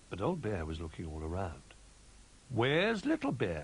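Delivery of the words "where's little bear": anxious, higher, louder, slower. An old bear asks the others where a missing friend is, anxious. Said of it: "he asked anxiously".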